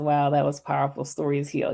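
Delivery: ordinary talk, nothing marked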